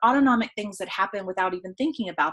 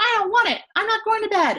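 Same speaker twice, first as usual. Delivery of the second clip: put-on very high, annoying, whiny child's voice; 13 semitones higher, 4 dB louder than usual. Telling parents how a kid reacts at bedtime; imitating an annoying kid voice. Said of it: "That was my kid voice".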